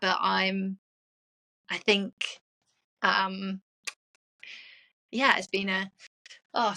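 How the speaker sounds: emotional, faltering, stumbling broken-off speech. Sharing something personal in a conversation, getting emotional. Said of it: "sorry, I wasn't expecting me to get emotional".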